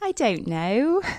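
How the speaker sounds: put-on English accent. Asked to give an English accent, the speaker tries one: English accent. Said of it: "Can you give me an English accent?".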